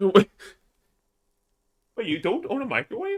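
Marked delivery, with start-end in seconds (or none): 2.0-3.2 high, curious, genuinely non-judgmental tone. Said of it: "I'm not saying this in, like, a judgmental tone".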